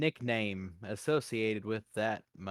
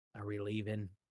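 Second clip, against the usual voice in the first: conspiratorial secretive whisper, quieter; 6 dB quieter than usual. Leaning close to another player in the scene: conspiratorial whisper. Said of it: "conspiratorially whispering".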